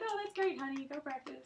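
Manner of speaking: motherly voice. Retelling mom's reply to a kid's playing: imitating mom. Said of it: "and she'd be like".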